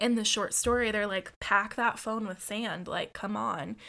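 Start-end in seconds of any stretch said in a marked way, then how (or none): none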